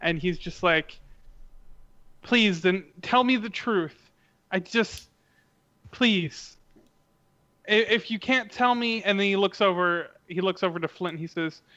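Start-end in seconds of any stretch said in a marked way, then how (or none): 2.2-9.0 voice catching, choked up, on the verge of crying. Voicing a character pleading for the truth, choking up. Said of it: "start to, like, choke up".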